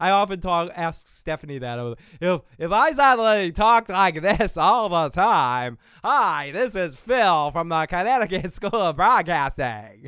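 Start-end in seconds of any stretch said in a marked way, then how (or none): 6.0-10.1 trained broadcast-style radio announcer voice. Showing the voice the speaker jokes about using all the time; broadcaster voice. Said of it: "this is how broadcasters talk".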